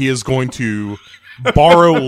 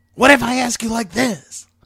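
very high, squeaky put-on voice, rising; 11 semitones higher than usual. A job applicant asks the interviewer again, this time in a Clint Howard impression. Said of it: "that is a good Clint Howard".

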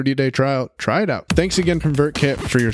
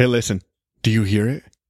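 sultry, sweet, sexy voice, much lower; 3 semitones lower than usual. Podcast host opening an episode for listeners, in a sweet, sexy voice. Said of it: "Do you hear my sweet, sexy voice".

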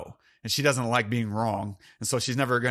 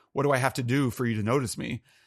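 mock desperate, pleading crying-out voice. Retelling a film scene where a woman at breakfast cries out: imitating someone crying out. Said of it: "she's crying out".

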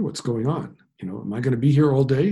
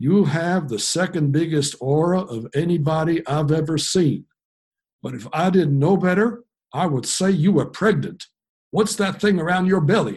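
put-on thick, broad, heavy Oklahoma accent, laid on; 4 semitones higher, 3 dB louder than usual. Retelling what a man said on first meeting, heavy Oklahoma accent. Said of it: "in his heavy Oklahoma accent".

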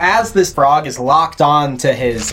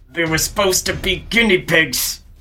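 slow, through gritted teeth. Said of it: "Through gritted teeth".

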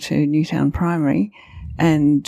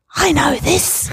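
triumphant stage whisper, pitched very high; 12 semitones higher than usual. Retelling a daughter's remark during a church service: imitating a triumphant stage whisper. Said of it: "my daughter said in a triumphant stage whisper".

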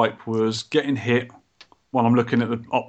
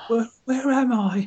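very high, confused, put-on old lady voice; 11 semitones higher than usual. Pretending to be lost mid-podcast: put-on old lady voice. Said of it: "You turned into an old lady".

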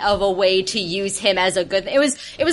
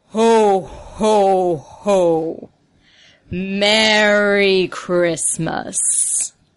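very slow, drawn-out, monstrous voice. Voicing a figure whose call rings across empty streets: booming Santa Claus voice. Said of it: "this booming voice, this monstrous tone".

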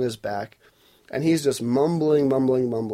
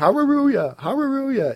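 mock shouting, pitched higher; 11 semitones higher than usual. Clarifying what a man was really shouting during a prayer session, correcting the previous words. imitating someone shouting. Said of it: "he starts shouting".

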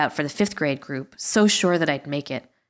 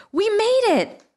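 out-of-breath, very high exclamation; 3 dB louder than usual. Narrator voicing Michelle rushing up to Lissa in a hallway, crying out breathlessly. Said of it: "she cried breathlessly".

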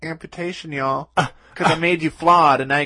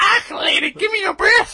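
put-on very high babyish voice with Scottish accent. Telling of a newborn in Scotland demanding a breast, Scottish baby voice. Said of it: "That's my best baby voice".

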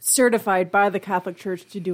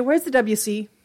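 ordinary talk, nothing marked

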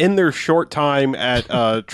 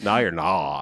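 put-on sudden, brief Valley Girl voice; 9 semitones lower, 6 dB quieter than usual. Recapping a movie scene, quoting the woman's sudden line in a valley girl voice. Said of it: "she suddenly goes Valley Girl for half a second".

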